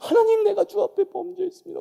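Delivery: very high, loud, tearful weeping. Retelling students at a worship meeting praying: imitating crying prayer. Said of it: "막 울면서".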